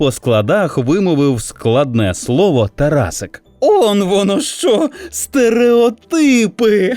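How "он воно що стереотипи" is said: high, slow line spoken through laughter. Narrator reads a sister answering her little brother: laughing. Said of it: "розсміялася сестра".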